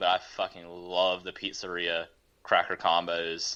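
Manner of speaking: usual speaking voice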